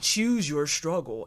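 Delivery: arcade fighting-game menu announcer voice. Describing a menu screen popping up in the brain: Mortal Kombat voice. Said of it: "in the Mortal Kombat voice".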